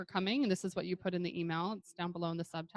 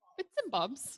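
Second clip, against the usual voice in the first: bad, fake put-on British accent, pitched up; 7 semitones higher than usual. An american showing a british phrase in a bad put-on british accent. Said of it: "That's my British accent, you guys. An American doing a British accent".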